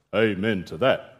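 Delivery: deep, low, tomb-like intoning voice. Narrator reading Mr. Flushpool's reply to Mrs. Flushpool, in a deep, tomb-like voice. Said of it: "said in a deep, tomb-like voice".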